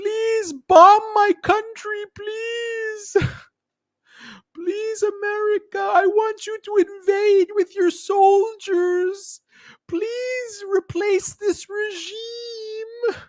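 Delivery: mocking crying, pleading voice. Mocking how girls are shown pleading for invasion: mocking imitation of crying girls. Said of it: "they bring out the girls crying about".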